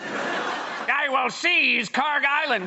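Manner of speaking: very slow, high, drawn-out cartoon villain voice. Showing how to sound like a supervillain: Skeletor voice. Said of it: "audition to be the voice of Skeletor".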